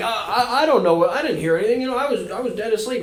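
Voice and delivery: playful put-on fun voice. Retelling a ghost story, quoting a father woken at night: imitating dad in a fun voice. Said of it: "I don't know why I'm doing a fun voice".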